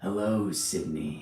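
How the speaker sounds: raspy horror-villain voice. Previewing the voice planned for a short film: raspy Ghostface voice. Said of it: "it's raspy".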